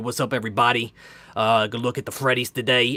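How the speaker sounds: put-on Boston accent. Imitating a collector from Boston on his channel: imitating a Boston accent. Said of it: "he was from Boston, so he would talk like this".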